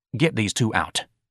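ordinary delivery, nothing marked

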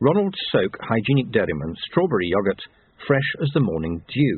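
plain

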